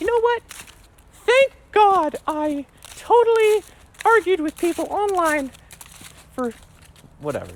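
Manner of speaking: very high, squeaky, swooping cartoon voice. Acting out a person on their deathbed, in a Mickey Mouse voice. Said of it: "Mickey Mickey Mouse voice".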